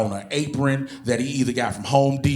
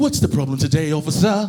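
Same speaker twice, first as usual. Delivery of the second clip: put-on British accent; 3 semitones higher, 4 dB louder than usual. Imagining talking to the cop who pulled him over, in a fake British accent. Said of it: "got to use a fake British accent".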